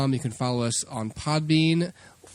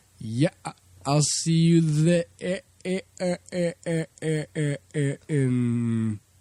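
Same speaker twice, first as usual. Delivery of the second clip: very slow, glitchy, lagging, choppy broken-up stutter. Mimicking how the other speaker comes through a bad Skype connection: imitating Dustin's choppy Skype audio. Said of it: "the Skype connection is so horrible, so I'm just hearing".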